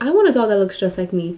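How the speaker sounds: plain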